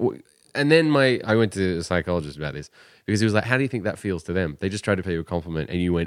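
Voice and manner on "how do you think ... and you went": usual speaking voice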